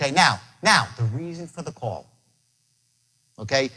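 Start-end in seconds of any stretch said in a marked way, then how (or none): 1.0-2.1 low, soft, secretive dropped voice. Coaching how to open a phone call, with a dropped, lowered voice. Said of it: "By dropping your voice".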